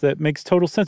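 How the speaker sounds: ordinary talk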